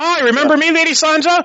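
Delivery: put-on loud announcing voice. Retelling a TV scene where Brienne greets Sansa: imitating Brienne loudly proclaiming. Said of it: "loudly proclaim to everyone within earshot".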